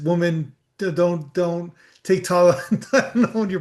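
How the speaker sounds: slow delivery talking through chuckles, laughing. Quoting a president's warning about Tylenol, laughing while talking. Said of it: "sorry, I'm laughing".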